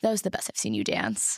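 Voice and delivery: put-on emotionless, level, unmoved, flat voice. Retelling a strict teacher's praise after a solo: imitating an emotionless voice. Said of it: "Like, no emotion".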